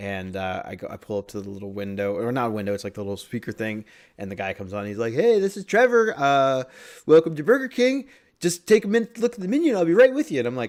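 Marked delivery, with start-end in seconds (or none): 5.1-10.4 very high, loud, super friendly voice. Retelling what the drive-thru speaker worker said: imitating a super friendly worker. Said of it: "he's super friendly, nice guy".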